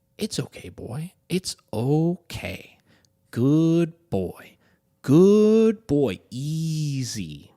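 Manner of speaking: gentle, calming, soothing voice, drawn-out and easy. Reading a story aloud, a dog owner calms a growling pup: soothing voice. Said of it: "reassure him with a soothing voice".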